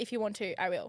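usual speaking voice

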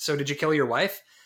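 ordinary talk

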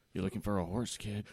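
creepy put-on stranger voice. Playing a stranger offering a kid a horse: creepy stranger voice. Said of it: "Why is there two creepy people now?".

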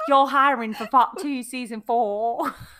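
London Cockney accent.

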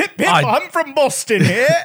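put-on English accent. Joking that the Boston Globe is in England: put-on English accent. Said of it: "Everybody knows this is what people from Boston sound like".

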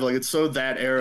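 ordinary talk, nothing marked

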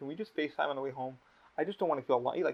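mock tearful pleading. Retelling what a man said on facetime while driving home, imitating him crying. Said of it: "He cried in the car on FaceTime".

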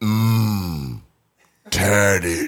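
deep, rumbling slow-motion voice with drawn-out mmm. Recounting a man's voice heard while walking past, in a deep slow-motion voice. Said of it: "It was a deep voice, too, like deeper than mine".

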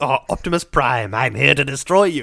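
robot villain character voice. Joking that a name sounds like a Transformers villain, then doing one: Transformers villain voice. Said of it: "He sounds like a Transformers villain".

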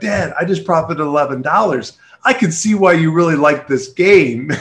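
put-on all-excited, thrilled child voice. Retelling the speaker's son coming home after selling, imitating him all excited. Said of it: "he's all excited".

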